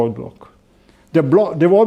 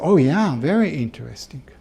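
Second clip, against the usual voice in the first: imitated polite, noncommittal American intonation, politely unimpressed; 2 semitones lower, 6 dB quieter than usual. Showing how Americans answer when asked if something is interesting, mimicking polite American intonation. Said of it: "how I said they're very interesting".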